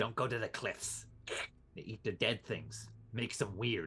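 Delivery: skittish, hissing, terse ferret voice in broken phrases. In a role-play game, a ferret answers the players' questions, in a hissing ferret voice. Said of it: "If there's nothing else you would like to ask the hissing, slightly unhelpful ferret. / The ferret's response this whole time is basically, the homeless guy screaming, "Get out of here, Grandpa! This".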